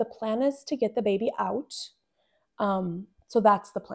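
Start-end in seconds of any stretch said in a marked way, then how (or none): 0.0-1.7 very calm, steady, even voice, acted. Retelling answering someone who asked what the plan was, imitating own calm reply. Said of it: "I very calmly looked at him and I said".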